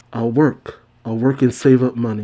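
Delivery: normal talking voice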